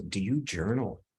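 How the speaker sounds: calm, low tone. Retelling what a holistic medicine doctor asked, imitating Doctor Ring's calm tone. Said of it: "kind of calm tone".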